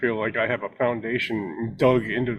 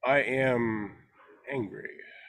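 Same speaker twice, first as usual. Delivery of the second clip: "angry" said softer, eased down gently; 2 semitones higher, 5 dB quieter than usual. Repeating the exercise phrase when asked to do it again: 'angry' said softer. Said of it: "Do it again".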